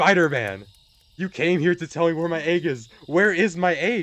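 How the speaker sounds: high, joyful, tearful pleading voice. Retelling meeting Spider-Man about the lost egg: mock crying, pleading with joy. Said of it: "I'm crying, I'm pleading with joy".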